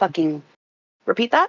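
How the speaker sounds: sarcastic, disbelieving tone. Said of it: "We get very sarcastic with him about this".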